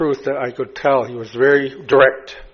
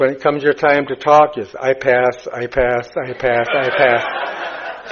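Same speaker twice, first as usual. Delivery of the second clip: usual speaking voice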